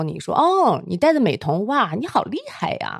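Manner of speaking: snide, two-faced, swooping sarcastic tone. Recalling classmates' snide remarks at a gathering, retelling a sarcastic jab. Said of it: "阴阳怪气的说".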